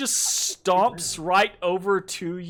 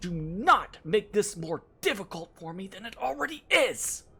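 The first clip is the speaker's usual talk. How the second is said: hushed voice. Voicing a character scolding the party in a hushed tone. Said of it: "she gets in this kind of fucking hushed tone".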